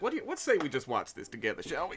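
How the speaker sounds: put-on loose, drunken-sounding delivery. A character slides down the bar up to another, tipsy from whiskey. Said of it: "feeling his whiskey and slides down the bar".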